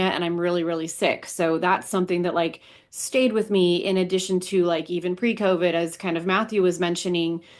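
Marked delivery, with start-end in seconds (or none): none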